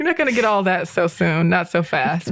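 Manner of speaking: ordinary delivery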